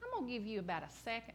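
very quiet half-whisper, under the breath. Retelling a warning to a boy bullying another: imitating her own half-whisper. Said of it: "I whispered it too".

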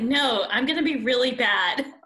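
ordinary delivery

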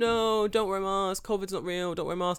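high, loud, put-on street protester shouting. Imitating people on the street telling others not to wear masks: imitating anti-mask people shouting. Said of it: "Why are you shouting this thing so loudly?".

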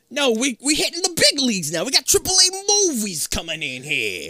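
put-on Italian-American accented speech. Retelling a theater owner turning down a director, in a put-on Italian-American accent. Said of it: "The fucking accent. It possesses me".

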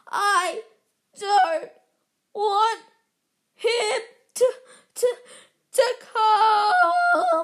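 loud, high, slow, shrill, drawn-out fake sobbing wail. Reading a story aloud, a boy refusing: yelling between pretend sobs. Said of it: "Dudley yelled between pre-, huge pretend sobs".

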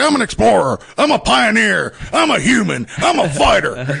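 very high-pitched, slow, rough, bellowed rant. Acting out a Halloween costume joke, tearing off a shirt: Alex Jones impression. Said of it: "good impression of him".

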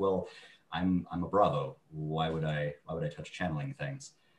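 ordinary talk

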